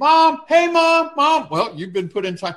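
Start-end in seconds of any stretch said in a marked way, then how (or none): 0.0-1.5 put-on very high, very slow little child's calling voice. Picturing the child in time out calling for mom: imitating a little child calling mom. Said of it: "I can just see us kinda like the little child".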